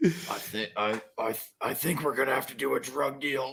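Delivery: rough, raspy action-hero voice, stammering at the start. Imitating an actor's line from a movie: imitating Colin Farrell's raspy Wolverine voice. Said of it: "He's doing this raspy, like, Wolverine voice".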